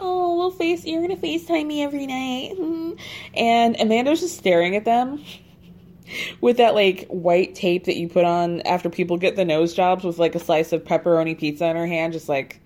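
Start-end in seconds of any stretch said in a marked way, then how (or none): 0.0-3.0 put-on high-pitched, cooing baby talk. Retelling what a woman said to a man, in a baby talk voice. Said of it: "she starts baby talking him".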